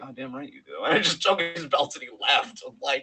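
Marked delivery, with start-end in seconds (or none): 0.0-0.8 quiet, muttered aside voice. Retelling a press conference reply: muttering under his breath like Roman Reigns. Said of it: "he said under his, like".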